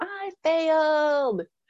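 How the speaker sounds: high, slow, celebratory mock shout.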